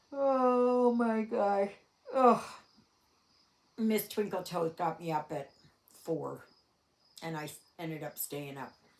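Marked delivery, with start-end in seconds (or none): 0.2-2.5 talking through a yawn, higher and louder. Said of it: "I'm gonna yawn".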